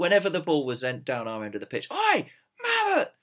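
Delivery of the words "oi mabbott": very high, shouted heckle. Retelling a bloke behind the goal shouting the same call all half: retelling a fan's shouting. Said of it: "he was shouting out".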